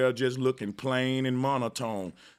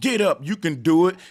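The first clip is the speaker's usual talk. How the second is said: drill sergeant shout, higher and louder; 4 semitones higher, 7 dB louder than usual. Showing how to motivate a fallen soldier: yelling like a drill sergeant. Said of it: "you yell like a drill sergeant".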